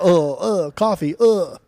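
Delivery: bad fake British accent with little grunting uhs. Joking about always grunting when trying an accent, bad British accent with grunts. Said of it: "Do people do that in, in England a lot?".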